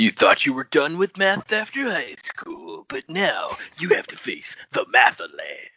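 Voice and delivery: deep, sweeping, swooping announcer voice. Riffing on a silly name in conversation, announcer voice. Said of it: "That's a good announcer voice".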